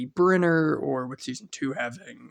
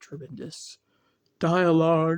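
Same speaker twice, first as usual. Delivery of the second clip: talking while yawning. Reviewing a show, the speaker praises the crew, yawning while talking. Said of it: "Excuse me, I'm yawning".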